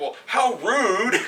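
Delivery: put-on indignant retort. Retelling a man's call to a cabin rental company, retelling him getting pissed off. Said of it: "He's getting pissed off".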